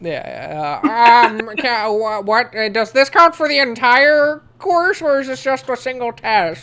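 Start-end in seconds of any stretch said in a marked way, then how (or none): 1.6-6.6 very loud, high-pitched, silly student voice. Acting out the question someone in the back of class asked, in a funny voice. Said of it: "but in like a funny voice".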